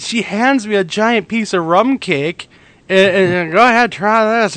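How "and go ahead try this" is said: mock drunken slurring, much higher pitch. Retelling how their wife handed over rum cake, imitating her slurred words. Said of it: "she's slurring her words as she's giving it to me".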